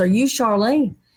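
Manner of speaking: usual speaking voice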